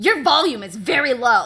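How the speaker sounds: very loud, nasally, annoying tone. Retelling a drive-thru visit, the speaker imitates the lady's loud, nasally, annoying voice. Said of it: "loud, nasally, annoying voice".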